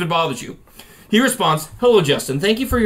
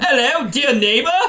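attempted Australian accent drifting into British; 4 semitones higher than usual. Reading out an Australian's story about trolling a neighbor, attempting an Australian accent. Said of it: "so I'll try to do my Australian voice".

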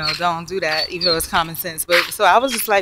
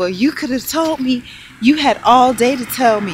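mock heated shouting, loud, high, angry; 5 semitones higher, 5 dB louder than usual. Retelling a neighbor's argument heard through the wall: imitating someone yelling. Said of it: "Then it got louder and he was like".

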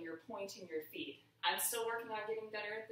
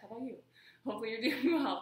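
out of breath, louder, higher; 3 semitones higher, 6 dB louder than usual. Pausing the music mid-workout to check on the dancers; out of breath. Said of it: "I'm out of breath".

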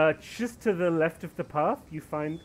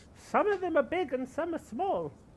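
put-on very high-pitched elderly woman voice; 11 semitones higher than usual. Voicing the old woman met outside with the cows, in an old woman voice. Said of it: "You see old woman outside with the cows".

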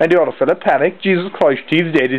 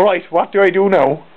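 ordinary talk, nothing marked

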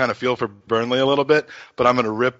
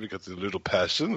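put-on French manager voice, lower and quieter; 4 semitones lower, 11 dB quieter than usual. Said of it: "only say that in his, in his voice".

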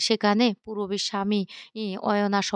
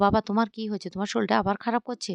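usual speaking voice

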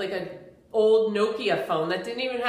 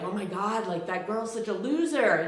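hushed, murmured, gossipy stage whisper; 4 dB quieter than usual. Imagining people gossiping about someone sitting alone: imitating people half-whispering. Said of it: "they're whispering, like".

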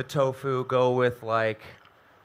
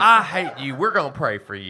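churchy, preaching Southern reverend delivery; 3 dB louder than usual. Riffing on a suggested bit, a comic answers in a Southern Baptist reverend voice. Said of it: "like Southern Baptist Reverend in it".

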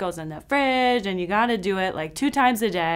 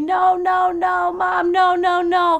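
put-on slow, stretched-out, high-pitched child's scream; 9 semitones higher, 6 dB louder than usual. Retelling holding him down for medicine: imitating a child screaming. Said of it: "as he's screaming at me".

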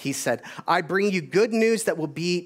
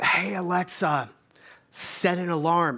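whispered voice. Retelling how they speak to an alarm clock late at night: imitating own whisper. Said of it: "I can whisper".

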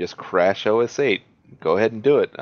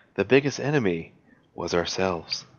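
grave, solemn documentary-narrator voice; 4 dB quieter than usual. Finishing a story about escaping a Spino in the game, in a serious narrator voice. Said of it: "Serious narrator voice".

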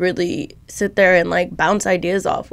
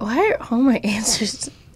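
speaking with small chuckles through the words; 4 semitones higher than usual. Asked what she is most grateful for right now, answer chuckling while talking. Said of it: "Why do you keep chuckling?".

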